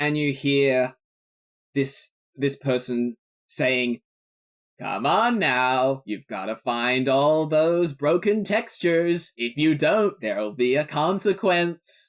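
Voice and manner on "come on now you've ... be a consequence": processed, digitized voice piped through a speaker. Describing a voice heard over a speaker, in a digitized voice through a speaker. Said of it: "it's like a digitalized voice".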